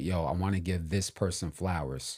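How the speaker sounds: ordinary talk, nothing marked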